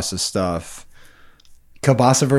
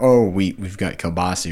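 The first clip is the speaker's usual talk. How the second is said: ordinary talk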